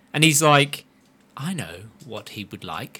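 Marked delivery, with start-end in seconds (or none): 1.3-3.0 deep, very hushed voice, barely voiced. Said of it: "you're doing it wrong again".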